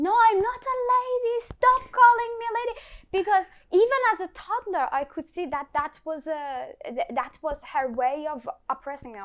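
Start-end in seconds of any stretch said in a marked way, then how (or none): 0.0-2.8 put-on shout, much higher and louder. Retelling shouting at their granny as a toddler, retelling a shout. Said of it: "I started shouting at her".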